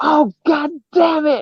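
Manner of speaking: put-on very high, loud, exclaiming American accent. Retelling a woman heard cursing out in the fog, loud American accent. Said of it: "I heard an American accent go".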